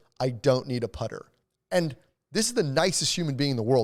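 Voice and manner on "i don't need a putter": put-on angry, mad child voice. Retelling what an upset golfer told the caddie: imitating a mad kid's unfamiliar voice. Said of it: "said it with a voice that I've never heard".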